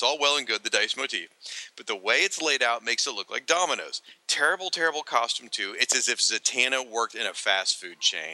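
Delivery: ordinary delivery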